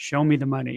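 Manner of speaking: put-on under-breath mutter. Recounting a dice throw at a casino, retelling a line muttered under breath. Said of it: "Under his breath".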